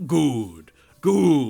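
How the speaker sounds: very low, sinister, menacing villain voice. Describing a reaction to a tv episode, menacing. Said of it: "rub my hands menacingly together and just go".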